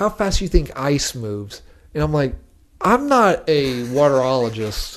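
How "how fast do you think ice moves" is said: usual speaking voice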